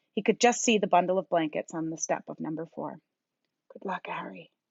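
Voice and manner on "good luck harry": soft, quiet murmur under the breath. Reading aloud a quiet goodbye to a baby: murmured. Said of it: "he murmured".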